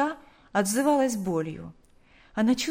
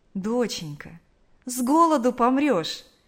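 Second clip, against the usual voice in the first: tender, affectionate, gentle; 3 semitones higher, 4 dB louder than usual. A mother wakes her daughter late in the evening, speaking tenderly. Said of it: "ласково сказала мать".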